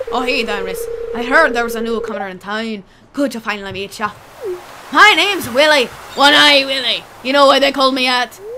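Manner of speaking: pirate accent, loud.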